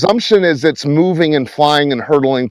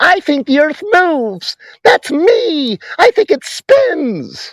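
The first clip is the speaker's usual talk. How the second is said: mocking mimicry, higher pitch; 13 semitones higher than usual. Mocking the other speaker's earlier words during an argument: mocking imitation. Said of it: "You're the one who said".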